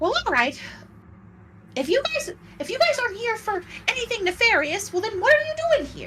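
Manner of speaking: very high, loud, shrill, grating, annoying squeaky creature voice. Describing a figure climbing down from a statue, then voicing him, annoying character voice. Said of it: "guy with the annoying voice that we've been hearing".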